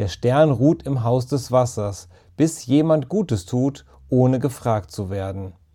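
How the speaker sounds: ordinary delivery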